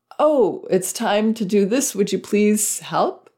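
open, polite tone. Showing how to ask for help from a place of power: open, polite tone. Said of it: "Very open like that".

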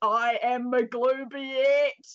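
put-on yelled in an Australian accent. Recounting a player in a sheet posing as their god, retold shout in australian accent. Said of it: "started shouting in an Australian accent".

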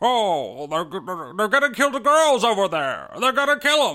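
put-on stumbling, halting speech like an old film star. Imitating a character in a film review: Jimmy Stewart impression. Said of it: "do his best Jimmy Stewart impression".

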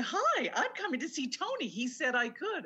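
put-on eager, high, bubbly excited tone. Retelling getting in touch with an assistant: imitating excited speech. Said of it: "all excited".

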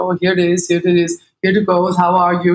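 put-on thick Danish accent. Retelling a traffic stop, imitating the ex-husband answering the cop in a thick Danish accent. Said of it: "my poor ex-husband with his thick Danish accent is like".

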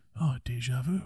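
relaxed, easygoing actor voice. Describing a film scene, quoting the hero: Keanu Reeves impression. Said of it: "That was actually a really good impression".

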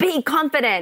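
high whisper. The speaker quotes a woman's mouthed encouragement to them, retelling a whisper. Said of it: "but like in a whisper".

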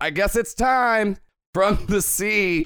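woman's high-pitched scream. Retelling a scene where the woman with salt eyes calls out, retelling a scream. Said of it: "she screams out".

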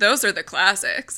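sarcastic put-on tone. Mocking people who narrowly define the classics: imitating someone sarcastically. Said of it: "I don't know if you can hear my sarcasm".

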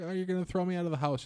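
high, hysterical bawling, sobbing and wailing through words. Retelling coming out to his mom, imitating his past self's hysterical bawling. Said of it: "I'm hysterical bawling".

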